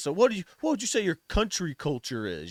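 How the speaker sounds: snooty, patronizing, condescending talking-down tone, acted out. Retelling how a man questioned them, in a mock-condescending tone. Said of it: "say it very condescending".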